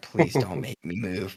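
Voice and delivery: put-on frightened voice. Retelling being stuck overnight in an airport corner: imitating own terrified plea. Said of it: "give 'em this puppy dog look like I'm terrified".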